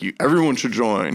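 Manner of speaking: sarcastic, falsely glowing tone. Acting out a sarcastic message about a financial institution: imitating sarcastic praise. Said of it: "there's the sarcastic, like".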